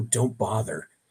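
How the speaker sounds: low, rumbling creature voice. Describing a voice barely heard from inside a closed room, in a low voice. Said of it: "sort of a a low voice go".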